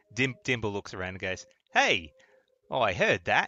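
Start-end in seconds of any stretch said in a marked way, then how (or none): 1.7-3.4 loud, booming, slow, swooping sing-song voice. A player voices Dimble looking around after hearing others talk: Dimble character voice. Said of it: "voice has changed too".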